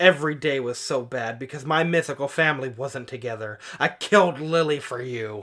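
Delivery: plain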